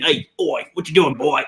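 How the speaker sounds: put-on Australian accent. You are showing how different people tried accents; imitating Lethal's Australian accent. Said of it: "Lethal does his Australian".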